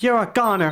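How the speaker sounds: violent shouted delivery. A taped piece of evidence plays: a female voice, shouted violent threat. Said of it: "a female voice shouting a violent threat".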